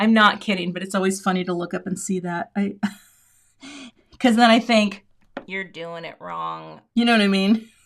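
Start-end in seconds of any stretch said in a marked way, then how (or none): 5.5-6.8 low, soft, slow complaining voice. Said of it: "It's the voice I hear".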